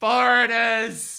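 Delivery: high, slow, loud yelling. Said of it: "you hear the guy yell back".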